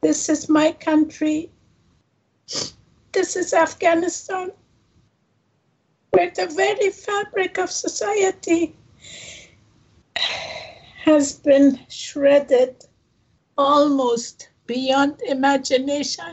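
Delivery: tearful, high, choked voice, speaking through tears. Nasrine speaks about her country, afghanistan, crying while speaking. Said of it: "I'm sorry, I'm a crybaby".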